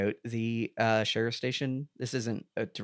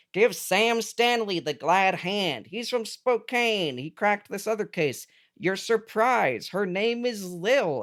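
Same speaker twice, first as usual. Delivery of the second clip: high, loud, slow, drawn-out, deliberate speech; 9 semitones higher, 5 dB louder than usual. Retelling a film scene with a David Lynch impression. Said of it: "bust out my David Lynch impression".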